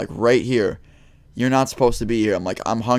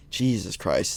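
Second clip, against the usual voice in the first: hushed whisper, much quieter; 6 dB quieter than usual. Retelling what the speaker whispered to a brother while being told to leave, whispered. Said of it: "I literally whispered to my brother".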